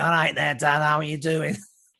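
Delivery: put-on Salford accent. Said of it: "She had a Salford accent".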